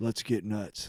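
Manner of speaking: fake bored, phoned-in tone. Retelling a trailer's joke about scenes: Michael Keaton phoning it in. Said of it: "Michael Keaton shows up and phones in everything".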